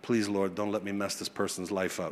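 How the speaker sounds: quick, quiet muttering under breath. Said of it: "I'm saying all of that very quickly under my breath".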